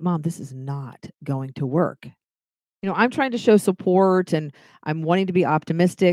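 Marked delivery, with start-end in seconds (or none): 0.0-2.1 hushed, soft, half-whispered stage whisper aside. Retelling what a son half-whispered while moving furniture: imitating someone half-whispering. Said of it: "he whispers to me".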